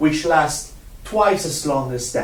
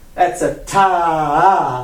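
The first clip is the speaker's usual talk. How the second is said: ta stretched long and slow.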